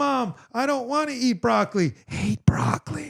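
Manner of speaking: put-on very high, slow little-kid whisper. Imitating the little kid from Malcolm in the Middle: Malcolm in the Middle kid whisper. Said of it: "he would whisper".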